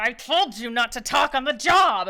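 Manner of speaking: very loud, teeth-clenched, through gritted teeth. A man angry at a tiefling scolds him, through gritted teeth. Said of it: "through gritted teeth is like".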